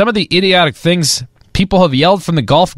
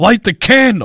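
put-on irritated, annoyed, angry outburst; 4 semitones higher than usual. Replaying a clip of a man yelling, imitating an angry yell. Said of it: "He sounds so pissed off".

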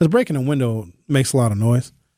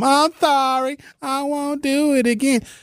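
mock very high, slow, blubbering crybaby sobbing; 13 semitones higher than usual. Imitating a caught car thief: mock crying, asking for mom. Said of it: "start crying and asking for their mom".

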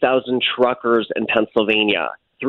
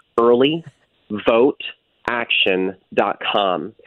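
said at a slower pace. Repeating a donation website address for listeners, said slower. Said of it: "Let me say that slower".

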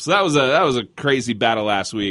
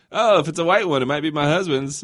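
dry, sarcastic half-laugh, pitched up, through chuckle; 5 semitones higher than usual. Speaker retells his wife answering someone asking whose car is smoking, imitating her sarcastic half-laugh. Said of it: "And she sarcastically, kind of laughing, said".

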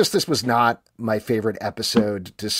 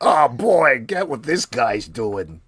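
put-on dragon voice; 2 semitones higher, 3 dB louder than usual. Joking about a season where viewers hear a dragon's thoughts: dragon voice. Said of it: "That's my dragon voice".

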